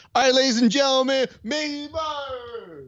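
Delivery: silly, very high announcer voice, one word drawn out. The speaker mocks how DC sounds pronouncing a name without a moving microphone. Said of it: "that's how dumb it sounds".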